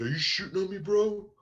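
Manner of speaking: high, loud, indignant wrestler-style voice.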